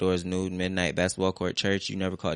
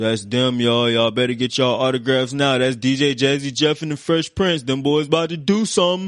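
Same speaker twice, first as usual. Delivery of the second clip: proud, loud, pitched-up shout; 7 semitones higher, 8 dB louder than usual. Retelling how a showman yelled to the kids on the street: imitating Dana's low baritone yell. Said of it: "in his low, weathered baritone voice yelled out".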